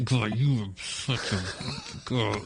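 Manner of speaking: said tightly through clenched, gritted teeth. Showing how an insult sounds said through clenched teeth. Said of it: "if he says it through clenched teeth".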